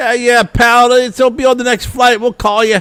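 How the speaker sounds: put-on loud, very high-pitched, dismissive Boston accent. Retelling a lost-bag complaint to the guy at the airport, imitating his Boston accent. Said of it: "that Boston accent is like".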